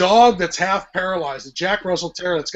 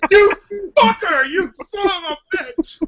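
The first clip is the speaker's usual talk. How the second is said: put-on very high, slow, sobbing, furious outburst; 13 semitones higher than usual. Describing a woman's reaction to a movie killing a puppy, retelling a tearful angry outburst. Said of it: "crying tears of anger for being emotionally manipulated".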